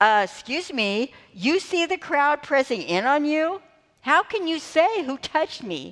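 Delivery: mock, very sarcastic, snarky, disbelieving tone. Retelling the disciples' reply to Jesus: imitating sarcastic disciples. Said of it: "They get really sarcastic".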